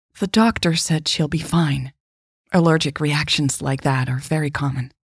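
plain reading voice

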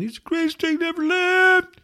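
play-acted very high, loud, sobbing cry. Imitating crying listeners praising someone who just died: mock crying. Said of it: "you're sad and you're crying and you're going".

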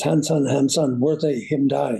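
ordinary talk, nothing marked

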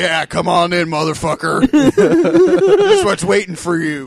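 loud, slow, swooping promo voice, drawn out. Voicing sharks inviting someone into the water: Macho Man voice. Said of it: "They all talk like the Macho Man".

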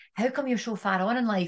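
usual speaking voice

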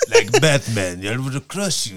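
put-on botched, mangled Spanish accent. Talking about the villain's accent, the speaker attempts a bad Bane accent impression. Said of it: "I fucked the accent up".

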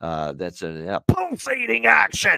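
high, slow announcer call with big pitch swoops. Talking Edmonton Oilers hockey, doing an announcer bit: Jack Michaels voice. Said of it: "that's Jack Michaels. I love doing that voice".

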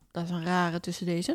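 ordinary delivery

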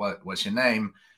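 ordinary talk

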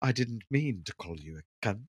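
put-on British accent. Imagining the guy apologizing, joking: put-on british accent. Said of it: "showed up with a cheese sandwich and a British accent".

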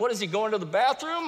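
play-acted scornful, teasing, taunting tone. Retelling the prophets of Baal story: imitating Elijah mocking. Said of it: "Elijah's kinda mocking them".

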